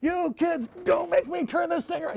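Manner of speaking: very high, loud yelling. Describing a car intercom, the speaker acts out a parent yelling at kids: imitating a parent yelling. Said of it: "and you're yelling at the kids".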